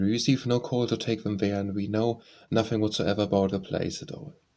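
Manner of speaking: plain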